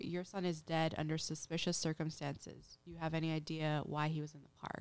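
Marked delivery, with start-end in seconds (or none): none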